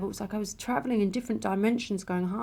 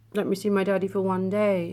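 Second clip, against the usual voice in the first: ordinary talk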